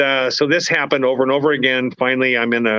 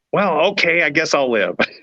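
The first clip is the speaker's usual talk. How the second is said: half-mocking, dry, sarcastic tone; 4 semitones higher than usual. Speaker retells their own answer when given an option to live: retelling a sarcastic reply. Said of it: "almost kind of sarcastically".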